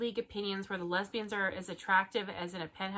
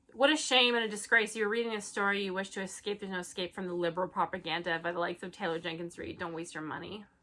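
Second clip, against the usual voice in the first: ordinary talk, nothing marked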